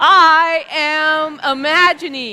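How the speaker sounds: firm, emphatic delivery, full of conviction. Leading the community in repeating a phrase, said with conviction. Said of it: "Now say it like you mean it".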